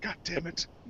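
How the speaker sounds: high-pitched, hushed, startled exclamation.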